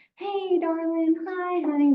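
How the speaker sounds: really high-pitched, slow talking-down voice. Describing elderspeak heard in nursing homes, really high-pitched elderspeak. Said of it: "that really high pitched".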